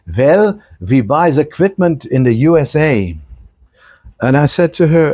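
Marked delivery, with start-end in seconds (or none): 0.2-3.2 put-on German accent. Retelling what a German woman said about quoting dollars, in a put-on German accent. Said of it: "I have to try to do her German accent".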